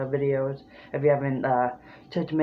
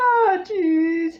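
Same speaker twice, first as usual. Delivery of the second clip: very high, loud drawn-out whine; 6 dB louder than usual. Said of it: "you have to raise your lyrics".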